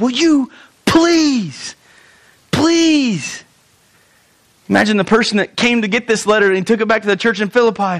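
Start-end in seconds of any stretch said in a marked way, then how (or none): 0.0-3.4 mock very drawn-out, slow, pitched-up coach-like pleading. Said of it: "much like the coach here".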